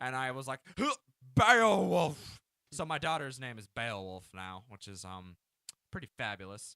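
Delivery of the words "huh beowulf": put-on very high, loud, shrill acted drunken shout. Retelling a game scene, answering captors as a drunk character: imitating a drunk character. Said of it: "as my drunk character was like".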